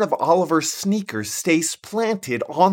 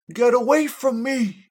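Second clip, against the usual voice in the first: faint, distant, echoing, high voice, barely carrying; 6 semitones higher than usual. A story's narrator voicing a call heard from a distance, faint and echoing. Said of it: "comes a faint echoing voice".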